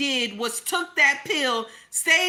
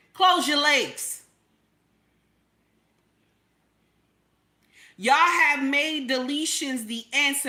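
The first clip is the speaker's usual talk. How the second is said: fervent, impassioned, passionate, intense delivery. Streamer talking to chat viewers after a super chat, passionate. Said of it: "why am I talking to y'all like this so passionately".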